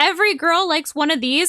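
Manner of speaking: plain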